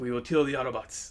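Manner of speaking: hushed, quiet, sinister and menacing voice. Describing Transformers, the speaker quotes Jetfire as a Decepticon in Jetfire's sinister tone. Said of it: "he talks very much with that sinister tone".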